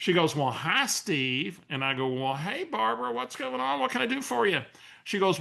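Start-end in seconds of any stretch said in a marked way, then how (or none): 0.3-1.6 put-on friendly Southern lady accent. Retelling an unexpected phone call from Barbara, doing Barbara's voice. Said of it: "now I'm going to use Barbara's voice a little bit".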